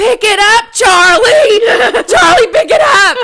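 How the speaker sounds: very loud, shrill, high-pitched full-volume screaming. Retelling screaming at the dog to pick up a mouse: imitating her own screaming. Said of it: "So I'm screaming, and you may wanna turn your volume down".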